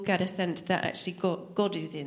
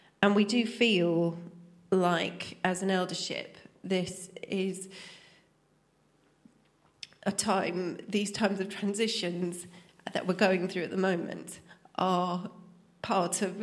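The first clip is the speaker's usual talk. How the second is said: slow, tearful voice catching and choking up. Speaking for the eldership team, the speaker starts crying mid-announcement: crying. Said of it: "I don't know why I'm crying".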